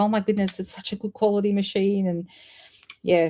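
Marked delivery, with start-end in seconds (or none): 0.0-2.1 put-on excited voice. Retelling what the guy who serviced the machine said, imitating an excited repairman. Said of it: "the guy who serviced it was so excited".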